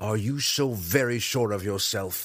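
growled, challenging tone. Reading the weapons master Zack pressing an attack on Drizzt, growled. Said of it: "Zack growled".

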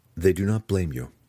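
ordinary delivery, nothing marked

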